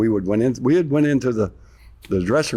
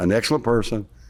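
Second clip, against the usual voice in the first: ordinary talk, nothing marked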